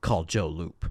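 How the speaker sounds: low, menacing, threatening voice. Recapping a scene, the speaker quotes Nick in a put-on menacing voice. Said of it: "in the you know menacing voice".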